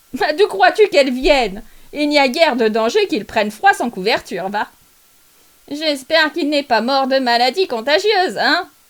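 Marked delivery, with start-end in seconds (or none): 0.2-4.7 brazen, cocky, brash, insolent tone. A charwoman talks to another woman about a dead man's shirt; charwoman's voice. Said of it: "« Fiez-vous à la femme de charge pour arriver la première !» s'écria celle qui était entrée avant les autres. / la femme qui avait parlé jeta son baluchon à terre, s'assit résolument sur un tabouret".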